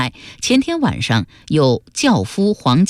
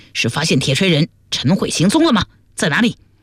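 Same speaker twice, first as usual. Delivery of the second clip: plain reading voice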